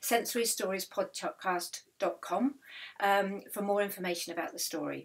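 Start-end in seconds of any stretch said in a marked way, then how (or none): none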